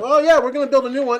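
high, fast mocking voice.

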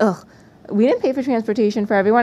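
normal talking voice

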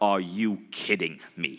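stern, intense, slow, drawn-out, dead serious. Retelling a mentor's reply to his earnings, imitating Bob Proctor's intense voice. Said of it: "Bob Proctor's got this really stern face and this really, really, like, intense voice".

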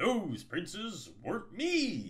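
complacent scoff. Told that no young prince has returned, Avalon answers with a complacent scoff. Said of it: "Avalon complacently scoffed".

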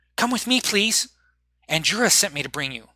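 clumsy, put-on little kid's voice. Narrator voices a small child taking Penny's hand, in a child's voice. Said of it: "I don't do a kid's voice very well".

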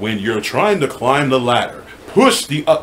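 tutorial narrator and game announcer voice. Describing the game Catherine, quoting its announcer's instructions in a Catherine announcer voice. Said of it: "he'll do that voice right there".

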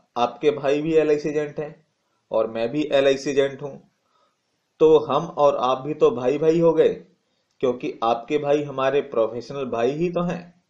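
ordinary talk

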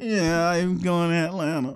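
sad, downcast voice. A player tells his teammates he is heading to Atlanta, sounding sad. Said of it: "You sound kind of sad there".

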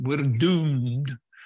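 put-on loud Scottish accent. Describing two characters, then quoting the other one in Private Fraser's Scottish accent. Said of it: "when he says in that Scottish accent".

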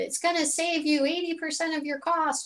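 silly comic put-on voice, very high-pitched. Speaker quotes a claim they have heard for years, in a funny put-on voice. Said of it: "I say it in that sort of funny voice".

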